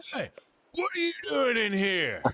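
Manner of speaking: very high, swooping shouted yell. Storyteller voicing a gang member who locks eyes with the listeners, yelling. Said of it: "he yelled that".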